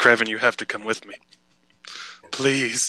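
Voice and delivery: tearful, crying, pleading tone. Pleading in character for kraven to come along: crying while pleading. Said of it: "Why are you crying?".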